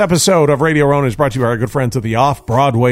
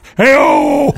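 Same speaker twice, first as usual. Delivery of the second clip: put-on sidekick cheer, higher pitched; 7 semitones higher, 4 dB louder than usual. Showing the others what the voice was like: Ed McMahon impression. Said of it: "It's kind of Ed McMahon-esque".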